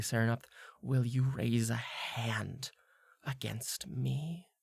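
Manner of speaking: half-whispered very softly, right at the ear. Speaking right into the listener's ear, half-whispered very quietly. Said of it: "she whispers this into your ear very quietly".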